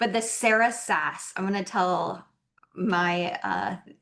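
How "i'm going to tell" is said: ordinary talk, nothing marked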